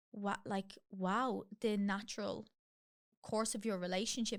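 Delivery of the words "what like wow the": ordinary delivery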